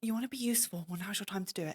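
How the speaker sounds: hushed whisper. Player voicing their character, urging another character to act, whispering. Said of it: "I'm like whispering it to him".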